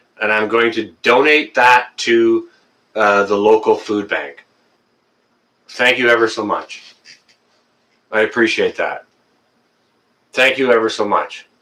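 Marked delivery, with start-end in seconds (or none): 5.7-11.4 teary-eyed, tearful voice. Thanking someone who pledged to donate food to the food bank, tearful. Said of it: "That brought a tear to my eye".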